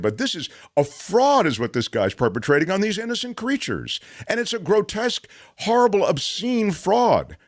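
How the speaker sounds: agitated, worked-up outburst, rising and building as it goes. Arguing against animal testing as a fraud: agitated. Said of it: "I'm sorry to be so agitated".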